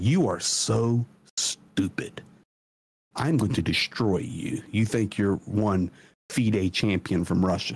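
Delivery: put-on arrogant man voice. Retelling a chess opponent's words to a young player: imitating an arrogant man. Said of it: "an arrogant prick".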